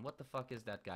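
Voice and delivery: ordinary talk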